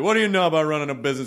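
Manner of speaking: put-on, casual, unbothered, nonchalant, offhand tone. Retelling the grandfather's remark to the dad: imitating grandfather's nonchalant tone. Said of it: "he just kinda had this nonchalant".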